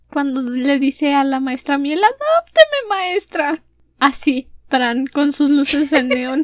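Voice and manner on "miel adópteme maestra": high, tiny little voice. A speaker acts out a plea to a teacher, in Matilda's little voice. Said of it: "con la vocecita de Matilda".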